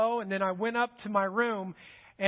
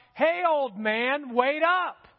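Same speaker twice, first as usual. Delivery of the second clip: loud, high, stretched-out call; 5 semitones higher, 4 dB louder than usual. Retelling how a daughter called out from behind on a walk: imitating someone yelling. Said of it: "all of a sudden yells out".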